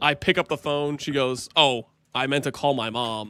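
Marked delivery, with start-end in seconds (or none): 1.6-3.3 mock disappointed tone, much lower. Retelling your wife's words when you picked up her call, imitating a disappointed voice. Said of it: "The disappointment in her voice".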